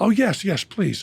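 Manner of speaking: mock obsequious voice. Retelling how staff answered a demanding guest, imitating fawning staff. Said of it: "So they said to Charlize".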